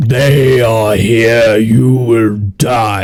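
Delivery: resounding, booming, magical voice, slow proclamation style. Running the game, the speaker voices a cult member addressing Namus, booming voice. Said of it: "he casts a booming voice".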